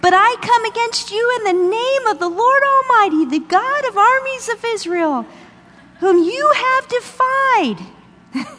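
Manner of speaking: tiny, small voice, pitched very high. Retelling David's challenge to his enemy, as little-voiced David. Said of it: "I imagine his voice was little".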